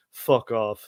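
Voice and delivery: put-on deadpan voice. Retelling a private's answer to why he joined: imitating a dead-eyed reply.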